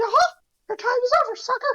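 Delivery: put-on cartoon mouse voice. Doing a cartoon voice for friends: Mickey voice. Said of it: "I can't do a good Mickey voice".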